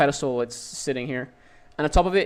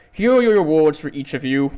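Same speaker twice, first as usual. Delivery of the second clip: booming, grand, sassy god voice; 6 dB louder than usual. A god hands out rewards to each of them: booming sassy god voice. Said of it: "this booming voice returns, very sassy as before".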